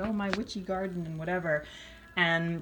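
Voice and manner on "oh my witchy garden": ordinary talk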